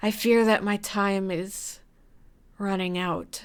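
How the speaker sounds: calm imitated raspy voice. Voice actor records the character Chic's only line in the episode: slightly raspy voice. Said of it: "I need to rasp it a little bit".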